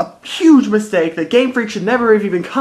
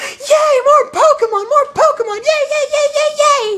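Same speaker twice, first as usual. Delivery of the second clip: put-on giddy boy scream, much higher, slower. Pokemon fan voicing the little giddy boy inside him, imitating a giddy boy screaming. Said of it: "a little giddy boy inside of me that's just screaming".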